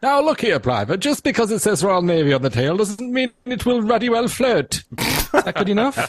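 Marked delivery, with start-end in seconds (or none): 0.0-4.8 upper-crust, posh military officer voice. Reading out a submitted message at the host's request, in his poshest RAF voice. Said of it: "in his poshest RAF voice".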